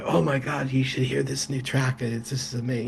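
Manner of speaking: acted whispering. Speaker recalls coming late to class and talking to Bob: retelling a whisper. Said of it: "but then I'm whispering to Bob".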